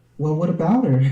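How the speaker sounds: soft-spoken, easy, gentle delivery. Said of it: "I know [name] in her soft voice".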